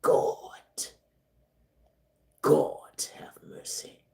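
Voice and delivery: slow, breathy, whispered preacher-style intoning. Speaking to a listener whose husband is an Eagles fan, preacher voice. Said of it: "Let me get in my preacher voice".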